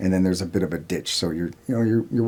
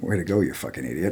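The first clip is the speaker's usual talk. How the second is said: hushed, low-volume stage whisper; 4 dB quieter than usual. Retelling what the team leader said after a loud noise: imitating a half-whisper. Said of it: "kinda whispers in my ear".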